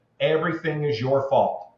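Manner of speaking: put-on yelling, blaming voice. Telling a story to Jeff, the speaker recalls a voice yelling from behind: imitating a yelling voice. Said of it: "somebody yelling at me".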